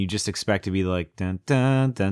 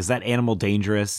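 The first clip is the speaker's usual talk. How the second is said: usual speaking voice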